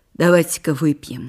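abrupt. Speaking to her friends, sharp. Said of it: "резко сказала Белла Михайловна".

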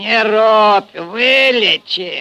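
very loud, high-pitched mocking, taunting jeer. A stocky Cossack rises from the table to answer a wounded Red Army man: mocking. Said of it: "насмешливо сказал приземистый казак".

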